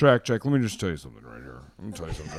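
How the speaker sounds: very low boss voice. Retelling what the boss always says, imitating the boss. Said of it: "This is a really accurate impression".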